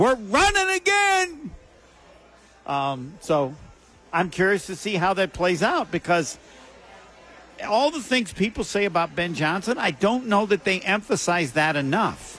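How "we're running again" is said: drawn-out high yell. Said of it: "I can see him yelling".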